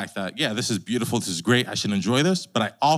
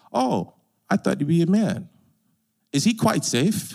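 put-on small, girlish voice pitched up high; 7 semitones higher than usual. Reading Susan's line from the C.S. Lewis story, Susan's little girl voice. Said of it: "That's my best little girl voice".

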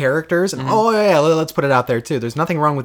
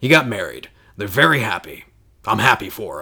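very deep, grizzled soldier character voice; 7 semitones lower than usual. Quoting the soldier's reply, in a soldier voice. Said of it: "That was my best soldier".

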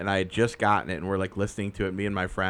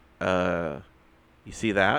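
normal talking voice

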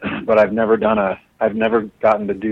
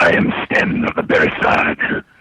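deep, low, very slow character voice; 5 semitones lower than usual. Showing how a character would sound, speaking in Sten character voice. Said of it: "He would sound something like this".

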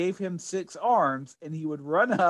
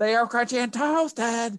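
screaming mascot voice, higher; 6 semitones higher than usual. Recalling old ad mascots, doing a screaming Sponge Monkeys imitation. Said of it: "these mascots who screamed".

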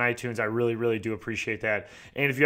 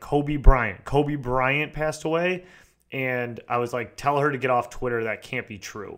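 ordinary talk

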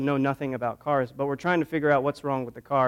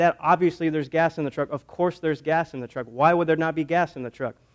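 ordinary delivery

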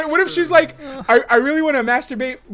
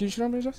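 quiet mumble under the breath; 11 dB quieter than usual. Following a suggestion on how to deliver a line, mumbled under the breath. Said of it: "What if you just mumble it under your breath?".

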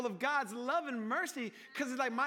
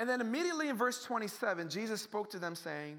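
ordinary talk

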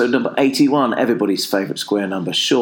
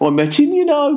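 put-on very high-pitched Birmingham accent. Retelling what the stranger in the car park said: brummie accent. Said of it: "my new Brummie mate said".

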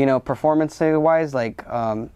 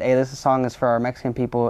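ordinary talk, nothing marked

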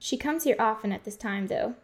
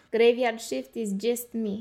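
slow, drawled, put-on Russian accent. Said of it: "What does a Russian accent have to".

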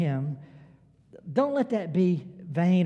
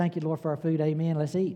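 hurried, quick, run-together, rattled-off words. Retelling a quick grace said at the table, rattled off pretty fast. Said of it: "That's pretty fast".

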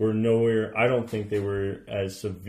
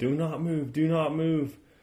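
urgent, high, slow, drawn-out shouted yell; 7 semitones higher than usual. Retelling what two people sitting above yelled on waking: imitating people yelling. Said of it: "they're yelling".

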